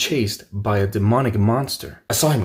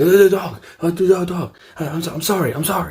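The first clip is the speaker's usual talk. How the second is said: mock babbling, broken-off, high stammering scream; 8 semitones higher, 4 dB louder than usual. Retelling a panicked apology to a startled stranger: retelling own screaming. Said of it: "just screaming".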